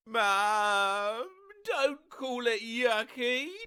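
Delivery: mock tearful child yelling. Retelling a toddler's tantrum over dinner: imitating a toddler bawling and yelling. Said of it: "starts bawling and yelled at me".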